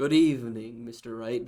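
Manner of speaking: put-on vampire voice. Greeting Mister Wright in a scene: Dracula voice. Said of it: "Dracula voice".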